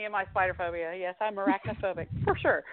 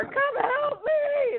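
very high-pitched desperate scream. A mother retells screaming to her daughter about a spider, retelling a scream for help. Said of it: "so I'm screaming to my daughter".

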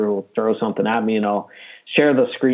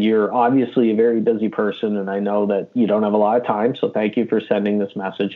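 ordinary talk, nothing marked

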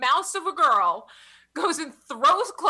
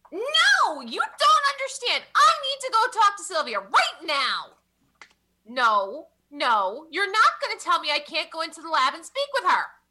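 seriously obnoxious, swooping, rowdy voice; 3 semitones higher than usual. A character causes a big ruckus in the hallway, in a seriously obnoxious voice. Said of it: "one seriously obnoxious voice in the hallway causing a real big ruckus".

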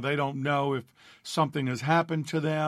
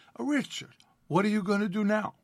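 put-on higher, broken-English Italian accent from Naples; 7 semitones higher than usual. Retelling what the grandmother asked after graduation: imitating grandmother's broken English. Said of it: "in her broken English".

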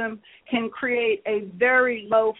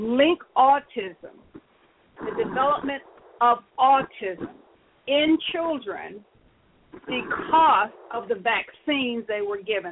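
very slow, deliberate, spelled out word by word. Speaker tells listeners he will say this part slowly, then says it slowly. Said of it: "now I'm going to say it slowly".

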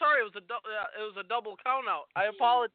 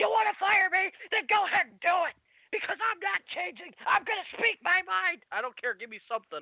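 mock, very high-pitched, shrill, screamed tirade; 9 semitones higher than usual. Quoting what Mick Foley said: retelling Mick Foley screaming. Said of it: "Mick Foley screaming like".

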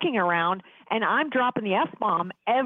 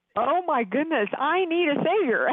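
high-pitched, bawling, tearful sobbing outburst; 5 semitones higher than usual. Recalling reading Mere Christianity years ago, act out your past self bawling. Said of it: "I'm just bawling".

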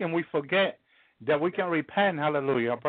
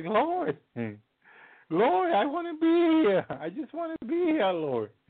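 put-on baby-like crying, much higher pitch, pleading; 10 semitones higher than usual. Retelling a moment with sons and daughter watching, imitating own crying like a baby. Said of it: "I started crying like a baby".

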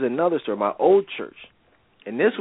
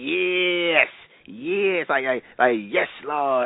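very slow, stretched-out, mocking drawl; 2 semitones higher than usual. Retelling a disruptive woman in a sermon: imitating a mocking voice. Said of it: "making a mockery of it".

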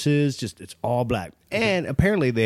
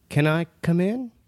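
put-on tiny, small little kid's voice; 4 semitones higher than usual. Retelling what a voice heard over the camera audio asked: little kid's voice. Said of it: "like a little kid's voice".

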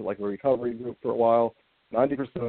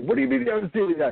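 acted out, very high-pitched yelling; 12 semitones higher, 3 dB louder than usual. Retelling how Dallas reacted to an unseen movie: imitating Dallas yelling. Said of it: "He started, like, yelling at me".

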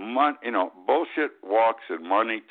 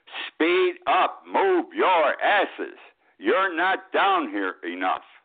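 emphatic, insistent, raised, swooping, deliberate voice; 6 semitones higher than usual. Relaying the citizens' complaints to the federal government, in a raised voice. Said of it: "I apologize for raising my voice".

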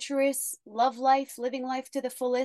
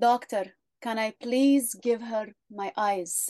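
put-on Arabic accent; 2 semitones lower than usual.

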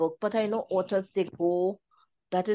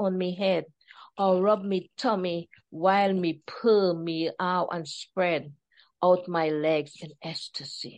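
attempted Jamaican accent in a cat voice. Voicing a cat asking to be petted: attempted Jamaican-accent cat voice. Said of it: "I don't have the Jamaican accent down pat, but I try to".

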